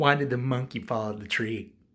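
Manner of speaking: normal talking voice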